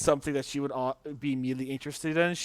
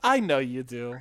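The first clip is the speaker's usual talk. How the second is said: acted earnest, sincere tone, not sarcastic. Retelling a story, the speaker voices her answer to his sarcastic remark: acting out a sincere reply. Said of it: "And she's saying it not sarcastically at all".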